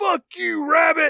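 high scream. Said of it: "he screams".

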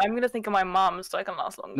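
ordinary delivery

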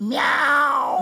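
high, cute, loud shouted meow.

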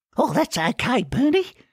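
choked, strangled, very high falsetto. Narrator reads the runt's reply to Bernie as he hops in pain, strangled falsetto. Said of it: "replied the runt in a strangled falsetto".

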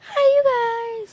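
voice cracking into a squeak. Vlogger greeting viewers on eclipse day, voice squeaking. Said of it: "that was a squeak in my voice".

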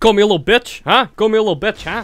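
very loud, high, brash New York accent. Redoing a comeback in a better voice, put-on New York accent. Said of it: "New York".

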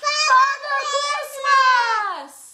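shouting loudly. Leading everyone to call for Father Christmas: shouting loudly. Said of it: "shout, "Father Christmas," really loudly".

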